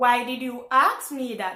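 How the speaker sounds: ordinary delivery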